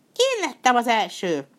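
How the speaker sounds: loud, high-pitched, triumphant crying out. Narrator reading the rat after it jumps ahead of the buffalo, triumphant cry. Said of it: "diadalmasan kiáltott fel".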